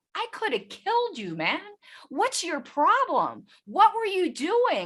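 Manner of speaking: very high, swooping, rattled angry yelling, acted out. Retelling the ex's account of screaming at a man, retelling a scream. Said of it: "I'm screaming at this guy".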